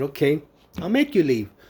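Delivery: ordinary delivery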